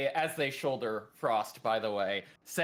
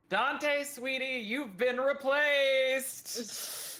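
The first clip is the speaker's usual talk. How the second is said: very high, long, drawn-out called-out shout; 11 semitones higher than usual. Voicing a concussed character calling out to another character: yelling in character. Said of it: "and then yell at Dante".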